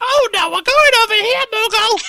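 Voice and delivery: very high, loud, shrill, annoying creature voice. Asked by a friend for an impression, doing an annoying high-pitched Moogle voice. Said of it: "annoying and high-pitched".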